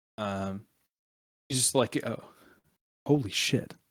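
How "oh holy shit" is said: muttered, mumbled under the breath. Retelling what a man said on seeing someone, muttered under his breath. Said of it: "under his breath".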